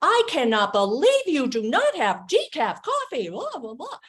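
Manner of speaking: high, swooping angry shout. Retelling a woman complaining at a coffee counter: imitating a raised, yelling voice. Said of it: "this woman's raising her voice".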